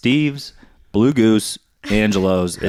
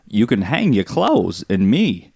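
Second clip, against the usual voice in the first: very slow, deliberate, drawn-out character delivery. Offering the others an impression: Christopher Walken impression. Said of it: "Walken impression".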